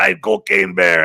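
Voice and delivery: put-on hammed-up Cuban gangster accent. Recalling handing out business cards as Cocaine Bear, speaker does terrible Tony Montana impression. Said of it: "that's a terrible Tony Montana impression".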